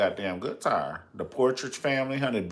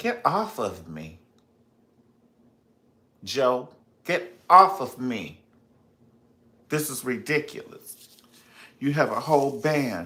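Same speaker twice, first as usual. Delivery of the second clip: slow, deliberate, drawn-out protesting tone. Retelling a complaint to a husband about more babies: imitating Catherine Jackson. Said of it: "Catherine was like".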